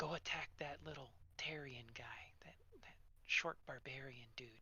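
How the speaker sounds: very soft, hushed, sly scheming villain whisper. Voicing a grinning villain who whispers a suggestion to a player: whispering villain. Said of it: "he whispers to you and says".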